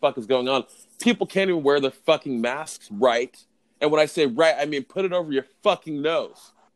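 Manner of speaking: worked-up, heated, increasingly wound-up delivery. Speaker ranting about people not paying attention, a little worked up. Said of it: "I'm a little worked up".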